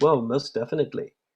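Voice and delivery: put-on South African accent. Speaker quotes a woman's reply to his worry about practice: South African accent. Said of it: "in this lovely South African accent".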